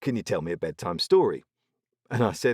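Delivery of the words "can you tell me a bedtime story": put-on cheeky, playful tone. Retelling a listener's request for a bedtime story: imitating a cheeky request. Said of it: "sort of in a cheekily way went".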